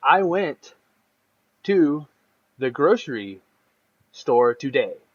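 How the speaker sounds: put-on choppy halting speech. Imitating a game character who speaks in fragments: imitating fragmented halting speech. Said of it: "his sentences are fragmented".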